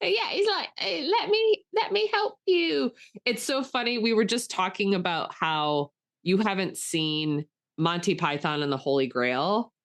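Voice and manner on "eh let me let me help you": very high, squeaky, scrappy little voice. Retelling a movie scene where a scrappy man asks to be knighted: Sir Percival voice. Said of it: "He's a scrappy man".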